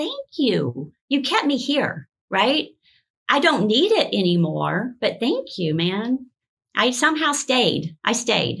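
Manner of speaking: voice catching, choked up, on the verge of crying. Recalling kneeling to thank the medicines that kept them alive, about to cry. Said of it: "I'm about to cry".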